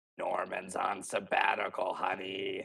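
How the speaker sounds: manic, rough, gritty villain voice. Praising how the actor flips from playing Norman: Green Goblin voice. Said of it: "and like does that voice".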